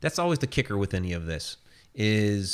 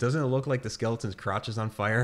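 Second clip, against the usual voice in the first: usual speaking voice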